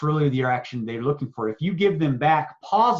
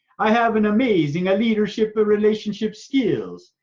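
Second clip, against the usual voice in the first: put-on high Italian grandmother voice; 7 semitones higher than usual. Speaker saying a self-declaration as an example, italian grandma voice. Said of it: "Italian grandma voice. I will say my declarations this way".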